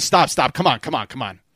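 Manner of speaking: put-on very strong North Jersey Italian accent. Imitating the dad's voice in the speaker's head, in a north jersey italian accent. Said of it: "very North Jersey Italian".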